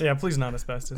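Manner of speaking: ordinary talk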